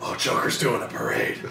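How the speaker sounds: breathy, whispered caped-hero voice.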